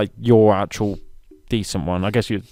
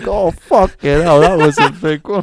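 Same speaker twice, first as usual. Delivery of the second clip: muffled hen voice, higher and louder; 9 semitones higher, 8 dB louder than usual. Voicing a chicken laying an egg in a shack: muffled chicken voice.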